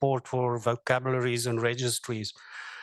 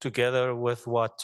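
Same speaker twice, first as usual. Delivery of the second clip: ordinary delivery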